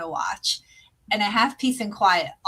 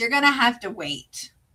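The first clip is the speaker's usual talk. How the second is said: mock irritated, annoyed tone; 3 semitones higher than usual. Retelling asking the kids from the bathroom: imitating own annoyed tone. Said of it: "and I have a tone".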